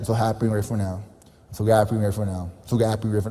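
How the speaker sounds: flat, unenthusiastic. Showing how a beginner repeats an affirmation, repeating with no energy. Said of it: "you're not repeating with energy".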